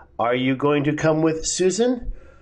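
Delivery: voice rising in pitch on the word "Susan". Teaching intonation with a yes-no question example: rising on Susan. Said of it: "the yes-no question is rising".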